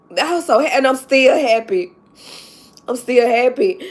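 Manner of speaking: crying, tearful voice through the words. Speaking to viewers after apologizing for crying, crying. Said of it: "I'm so sorry to cry".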